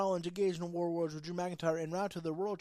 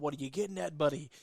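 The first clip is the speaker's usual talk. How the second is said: put-on sarcastic wrestler voice; 3 semitones lower than usual. Retelling a wrestler's taunt in a promo: imitating Drew McIntyre's sarcasm. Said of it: "I liked the sarcasm when he was all".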